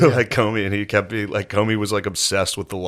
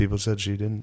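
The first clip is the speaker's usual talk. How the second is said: put-on bragging voice, quieter; 6 dB quieter than usual. Retelling how Trump talks in a meeting: imitating Trump bragging. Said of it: "bragging about".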